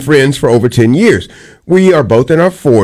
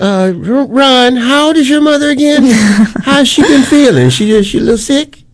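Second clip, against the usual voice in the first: put-on old-lady voice, much higher; 12 semitones higher than usual. In an improv scene, the speaker addresses another player, old woman voice. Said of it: "you're doing the old woman voice".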